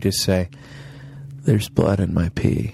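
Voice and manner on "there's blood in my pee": low, dead-level, uninflected deadpan monotone. Suggesting a line to say to door-to-door callers, in a real monotone. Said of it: "just real monotone".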